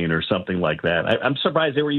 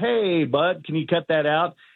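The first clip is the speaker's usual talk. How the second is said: light, chuckling delivery with a little laugh, pitched up; 6 semitones higher than usual. Retelling asking a kid kicking his plane seat to stop, with a little laugh. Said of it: "with a little laugh".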